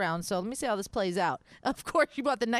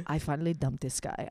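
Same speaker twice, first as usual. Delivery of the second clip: put-on Hungarian accent, voice dropped very low; 7 semitones lower than usual. Speaker retells a woman saying she dumped a guy, in Hungarian accent. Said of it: "so I'm gonna do it in her accent".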